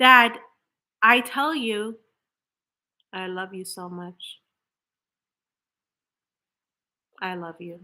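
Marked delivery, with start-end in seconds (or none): 3.1-7.8 low, very soft, hollow, flat, unfelt words. A speaker showing how affirmations sound without feeling behind them: flat, empty words. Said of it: "Were there just words?".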